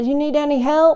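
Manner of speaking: put-on yell called out from a distance. Retelling how a new neighbor yelled to him from across the way; retelling a yell. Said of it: "And he yells out".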